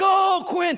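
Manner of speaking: play-acted shrill scream, very high and loud. Retelling cheering for a son on the football field: imitating screaming at a football game. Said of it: "and I'm screaming".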